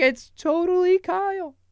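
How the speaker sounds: high, excited, starstruck call. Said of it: "I was like".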